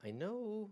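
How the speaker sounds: sudden voice crack mid-phrase. Wrapping up their part of a discussion, voice cracking. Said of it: "voice crack".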